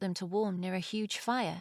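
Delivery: ordinary delivery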